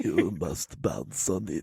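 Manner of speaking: hushed, soft, slow monster voice. Trying Nosferatu's voice for the first time, Nosferatu voice. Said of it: "first time I've tried to do Nosferatu's voice".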